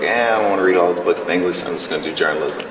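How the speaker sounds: normal talking voice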